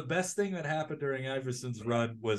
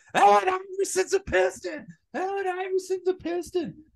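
mock, shrill, very high-pitched screaming; 5 dB louder than usual. Retelling a roommate pounding on the door: imitating a roommate screaming.

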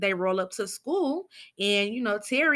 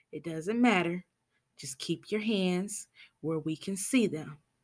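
put-on calm tone, quieter; 4 semitones lower, 5 dB quieter than usual. Retelling a police officer answering the driver at a traffic stop, imitating an officer's calm tone. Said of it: "And he calmly says".

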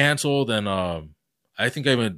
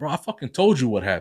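put-on fed-up tone, growing upset; 2 semitones higher than usual. Retelling what he told the front desk worker: imitating own upset retort. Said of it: "now I'm getting upset".

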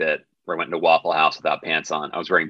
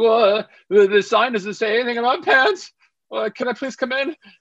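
mock very high, anxious, nervous pleading tone. Retelling his own words at a Waffle House door: imitating own nervous voice. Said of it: "You can hear it in my voice".

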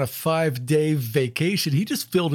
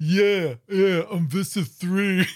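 put-on thick-headed villain voice; 3 semitones higher than usual. Describing how a narrator voices a character to another speaker, thick-headed Visser 3 voice. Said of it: "He's this thick-headed".

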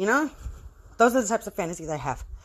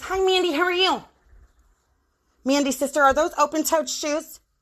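nitpicking, fussy voice; 5 semitones higher than usual. Retelling how the vice principal spoke to two sisters: imitating the vice principal. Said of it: "the stupid-ass vice principal I had".

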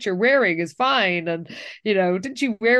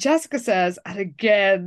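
usual speaking voice

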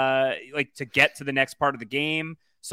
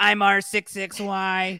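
imitated cat voice; 7 semitones higher than usual. Voicing a robot character giving his name, impression of cat Lolo. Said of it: "talking like my impression of my cat".

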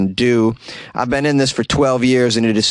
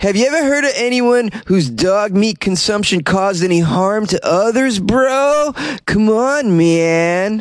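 higher put-on stoner voice; 9 semitones higher than usual. Reading a quote from the dog meat farmers' head: imitating Zhu Young Bong as a stoner. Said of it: "who probably talks like a stoner".

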